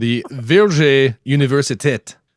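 slow, unintended French-sounding accent.

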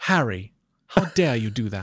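put-on English accent. Showing the host the voice used when reading Harry Potter aloud: Hermione voice. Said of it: "What's your Hermione voice?".

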